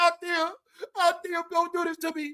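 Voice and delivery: mock, crying, tearful begging tone. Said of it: "He was crying, saying".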